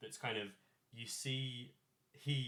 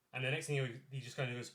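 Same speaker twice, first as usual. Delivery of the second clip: ordinary delivery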